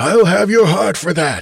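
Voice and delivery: furious, raging bellow, very high and loud. Narrator voicing the Carthian after ale splashes over him: bellowing in fury. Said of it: "he bellowed".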